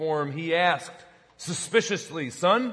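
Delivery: plain reading voice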